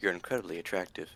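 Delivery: hushed stage half-whisper. Voicing a character leaning over to a companion, half-whispering. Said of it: "he'll lean over and whisper to you".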